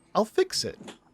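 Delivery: very high, desperate voice, pitch pushed way up. Retelling a character's line on the losing side: imitating Troilus's desperate high voice. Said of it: "His voice went up in pitch".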